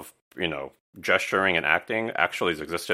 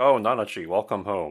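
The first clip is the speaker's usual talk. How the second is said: put-on calm tone; 3 semitones higher than usual. Recounting a character greeting Nanachi on return, mock-calm voice. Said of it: "he's very calm".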